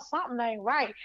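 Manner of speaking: plain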